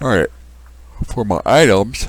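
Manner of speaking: loud talk, words stretched by a yawn. Tired while arranging items for a setup, speaking through a yawn. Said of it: "sorry, but I'm yawning so much".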